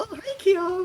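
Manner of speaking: very high-pitched, completely oblivious voice. Acting out a murder scene with Angie completely oblivious: oblivious Angie voice. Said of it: "Angie was just completely oblivious".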